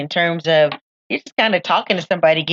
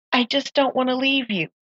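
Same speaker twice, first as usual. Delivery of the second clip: put-on crying, higher and quieter; 7 semitones higher, 5 dB quieter than usual. Retelling what he said when he turned around, imitating someone crying. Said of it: "he turns around and is crying".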